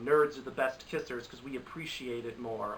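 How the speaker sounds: ordinary delivery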